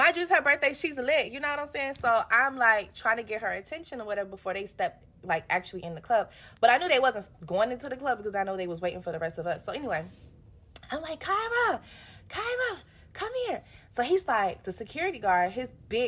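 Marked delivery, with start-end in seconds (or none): 11.2-13.6 very high, drawn-out calling out, acted. Retelling trying to get a birthday girl's attention outside a club, retelling calling out a name. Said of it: "calling Kyra's name".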